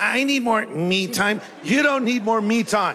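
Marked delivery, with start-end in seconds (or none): 0.0-1.4 deliberately obnoxious, drawn-out put-on voice. Mocking what the listener says about needing time, imitating an obnoxious voice. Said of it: "And you even use that voice".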